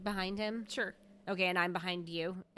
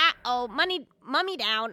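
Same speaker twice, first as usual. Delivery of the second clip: loud, high, squawking, bird-like parrot cries; 5 semitones higher, 8 dB louder than usual. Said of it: "I squawk and Raven going".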